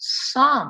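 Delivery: some stressed, slow and loud. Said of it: "I'm emphasizing the word some".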